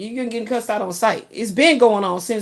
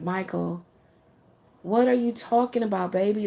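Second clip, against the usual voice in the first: mock sugary, very sweet, doting, loving tone; 6 dB quieter than usual. Retelling how she said it to michael: acting out a very sweet tone. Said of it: "I had to say it in a very sweet version".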